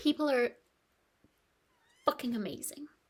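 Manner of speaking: crying while talking. Recounting kindness from people, crying while talking. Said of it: "I'm only crying because I'm exhausted".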